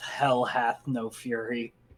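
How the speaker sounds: muttering under her breath. Playing a character walking away, muttering under her breath. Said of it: "just mutters under her breath".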